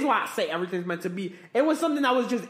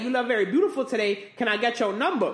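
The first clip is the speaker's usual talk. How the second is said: normal talking voice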